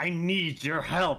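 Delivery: deeply displeased. Narrator reads a character telling another they need them, very disgruntled. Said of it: "Like in a very disgruntled voice".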